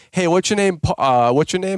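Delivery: mock swaggering, cocky, brash know-it-all manner. Retelling how a friend tells the story: imitating a cocky YouTuber. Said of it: "this cocky YouTuber comes up to the table".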